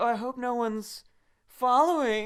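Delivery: very high, slow, sultry little voice. Acting out the mermaid peeking back from her cave: imitating her sultry voice. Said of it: "She doesn't do that voice".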